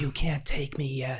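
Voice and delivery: put-on, high-pitched screamed outburst. Retelling a coworker screaming at shadow people: imitating someone screaming. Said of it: "she was screaming at him like".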